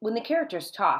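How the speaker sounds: plain reading voice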